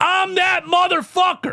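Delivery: mock shrill, very high, loud shout. Retelling what a player yelled in the opposing arena: imitating someone yelling. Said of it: "turned around and yelled in the seventy-sixers arena".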